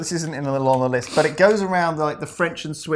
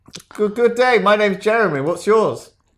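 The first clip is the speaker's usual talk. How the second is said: put-on French-Swiss accent; 5 semitones higher, 3 dB louder than usual. Asked to do a French-Swiss accent, introducing yourself: French-Swiss accent. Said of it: "Can you do a French slash Swiss accent?".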